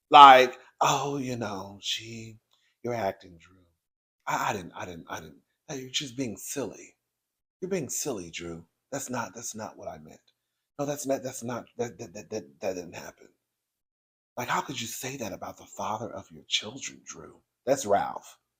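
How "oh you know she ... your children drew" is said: low, very soft mock voice like a wounded victim. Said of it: "trying to use this soft voice".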